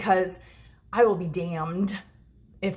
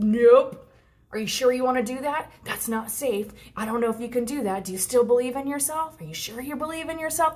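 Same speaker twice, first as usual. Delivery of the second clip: doubting, second-guessing, uncertain inner voice; 5 semitones higher than usual. Explaining a push and pull before leveling up, voicing her doubting ego. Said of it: "where your ego just goes".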